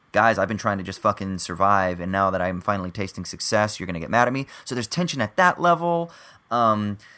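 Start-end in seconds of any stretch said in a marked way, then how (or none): none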